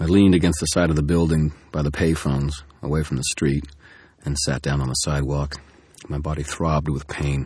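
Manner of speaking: plain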